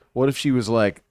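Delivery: normal talking voice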